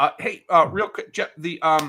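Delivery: stop-start hesitant speech. Speaker showing a planned stutter while talking about presentations, hesitant, stuttering. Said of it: "I'm stuttering because I'm letting my brain catch up".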